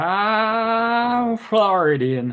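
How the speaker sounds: put-on American accent. Joking with co-hosts about accents, saying where he's from in an American accent. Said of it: "That's my American accent".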